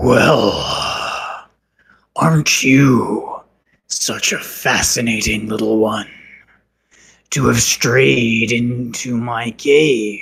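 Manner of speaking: deepest possible, low, rumbling giant's voice. A game master voices an unseen presence in a cave, deep rumbling voice. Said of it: "And the voice says".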